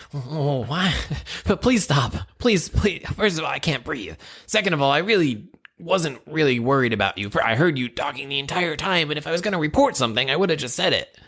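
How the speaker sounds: high goblin creature voice. Pleading with an interrogator who demands answers, goblin voice. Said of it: "your goblin sounds just like my goblin".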